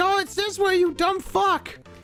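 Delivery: very high, drawn-out shrieking scream. Solving a puzzle, imagining a viewer yelling the answer: imitating a viewer screaming. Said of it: "on the screen just screaming at me".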